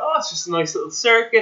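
play-acted, casual, offhand, breezy, nonchalant tone. Retelling how someone described a hard training program: imitating a nonchalant tone. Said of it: "he kinda just said it so nonchalant".

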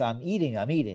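plain

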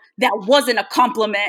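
mock angry voice. Retelling a man's reply after she thanked him, mock-angry retelling. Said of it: "he's like all angry while doing it".

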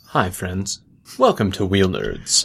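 low, smooth, swooping dulcet podcast host voice. Showing off the voice a guest spot complimented: dulcet podcast announcing voice. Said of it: "my dulcet podcast announcing voice".

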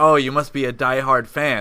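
put-on sarcastic tone. Retelling a talk with a guy rushing off to watch a game, very sarcastically. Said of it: "like very sarcastically".

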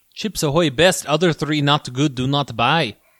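slow, deliberate put-on Russian accent. Reviewing chips ahoy cookies in a put-on russian accent. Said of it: "It was a Russian accent".

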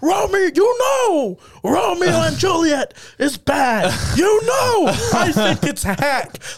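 acted-out outraged yelling, very high and drawn-out. Speaker retelling how a man started yelling at them, retelling someone yelling. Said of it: "He just started yelling".

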